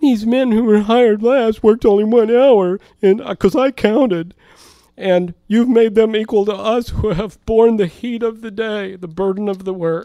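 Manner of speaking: high-pitched, whiny, grumbling, complaining voice. Reading aloud the workers' complaint against the landowner, whiny, grumbly voice. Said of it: "I'm going to read this in a whiny, grumbly voice".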